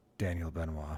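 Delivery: blank deadpan, very low and flat. Giving one's name again after being asked for more blank-faced: blank-faced Dwayne Johnson impression. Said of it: "can you be a bit more blank-faced".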